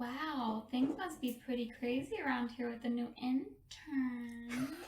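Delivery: flirtatious, flirty tone. Playing a character who flirts with the desk worker: flirting. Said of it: "I'll just flirt with him and say".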